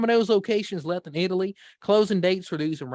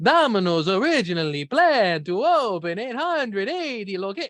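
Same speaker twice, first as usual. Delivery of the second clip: sounding like a vampire count. Reading a news report aloud on the show, in a Dracula accent. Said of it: "It's Dracula".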